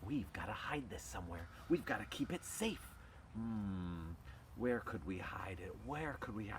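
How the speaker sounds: low, hushed, puzzled talking-dog voices. In a told story, the dogs bring the proclamation home and talk, voicing the dogs. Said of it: "Well, the dogs decide to go home and talk about this. We gotta figure something out. What are we gonna do? We need some help. / And it starts with a bunch of dogs who are sleeping in their house and t".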